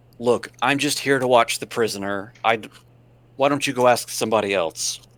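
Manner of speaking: irritated, annoyed, dismissive tone. Voicing a guard who wants to be left alone: visibly annoyed guard. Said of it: "He looks visibly annoyed".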